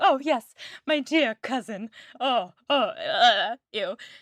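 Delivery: earnest, overly sincere character voice, dead earnest. Retelling how Collins answers Lizzie: Mr. Collins impression. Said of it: "he, Collins, totally thinks that she is, and he's like".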